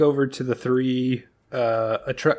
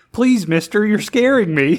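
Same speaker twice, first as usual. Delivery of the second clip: put-on pitch way up, wholesome small-town boy, loud; 9 semitones higher, 7 dB louder than usual. Retelling a movie scene, the speaker quotes a fleeing character, Opie-from-Andy-Griffith delivery. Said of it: "the most Opie from Andy Griffith like".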